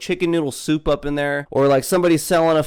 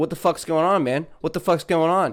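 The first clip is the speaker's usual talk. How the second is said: put-on angry tone; 2 semitones higher than usual. Acting out a boyfriend walking in on the harasser: acting out an angry boyfriend confronting. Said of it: "then you come in, you're like".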